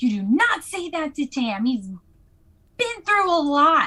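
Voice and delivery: loud yelling, hollering. Playing a dice game, a player's character goes right up to her: yelling in her face. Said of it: "I'm gonna yell in her face".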